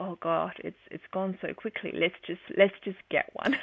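ordinary delivery

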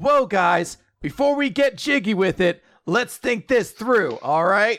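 put-on, goofy cool-guy voice. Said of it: "only a little bit goofy for him".

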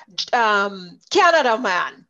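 put-on very loud, thickest Jamaican accent. Retelling answering people who asked where he is from; thickest jamaican accent. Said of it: "in my thickest Jamaican accent".

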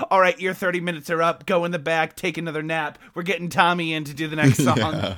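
ordinary talk

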